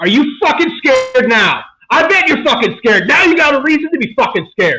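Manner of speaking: high, acted, enraged in-your-face shouting. Retelling yelling in the face of someone who acted scared, retelling own angry yelling. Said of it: "And I was yelling".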